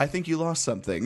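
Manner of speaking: wholesome with snark. Imitating how Superman would hand back a drone: imitating Superman smiling. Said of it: "he's gonna be smiling the entire time".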